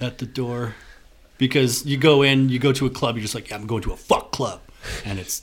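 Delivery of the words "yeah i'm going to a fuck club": ordinary delivery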